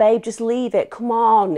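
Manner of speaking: high whiny voice. Retelling what a woman leaving a supermarket said to another woman, imitating a whiny voice. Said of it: "in a whiny voice".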